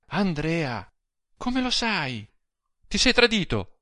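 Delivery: stunned, frightened disbelief. Narrating her reply to andrea, who fears her husband suspects them: astonished and frightened. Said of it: "con stupore pieno di spavento".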